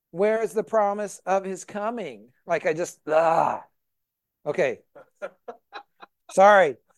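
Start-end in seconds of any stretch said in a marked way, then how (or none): none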